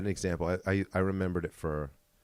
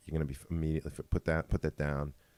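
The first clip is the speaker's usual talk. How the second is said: usual speaking voice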